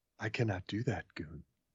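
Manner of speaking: quiet, low AI voice. Joking about Siri's threats over returning a phone, in a HAL 9000 voice. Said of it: "It should be more hell nine thousand".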